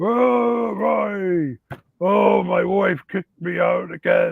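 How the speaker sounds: put-on funny slow creaky drunk voice, drawn-out vowels. Retelling a role-play where he played a drunk guy, in a funny drunk guy voice. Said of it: "I like to do the funny voice".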